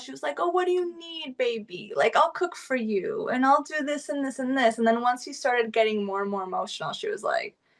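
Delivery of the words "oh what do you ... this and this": high, doting, fussing motherly voice. Retelling how she talked to him when he started crying, imitating a motherly tone. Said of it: "she was like very motherly as well".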